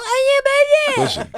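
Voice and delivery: mock very high, soothing, placating delivery. Accusing a friend of backing down after a dig: imitating someone backing down. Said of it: "you trigger, and then you pull back, and you go".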